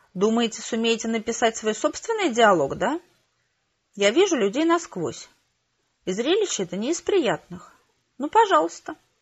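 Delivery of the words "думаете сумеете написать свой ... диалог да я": ordinary delivery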